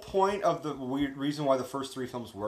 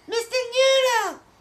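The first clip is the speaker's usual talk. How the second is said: very high, loud, squeaky puppet voice; 10 dB louder than usual. Talking with a friend about the films, the speaker does an Elmo voice for the guys. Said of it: "That's my Elmo impression for you guys".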